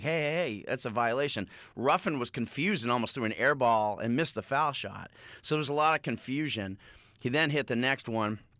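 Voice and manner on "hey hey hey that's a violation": usual speaking voice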